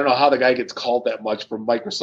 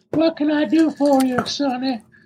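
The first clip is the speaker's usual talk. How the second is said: put-on very high, slow old southern lady voice; 14 semitones higher than usual. Describing a video of a guy using a voice modulator: old southern lady voice. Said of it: "he sounds like an old Southern lady".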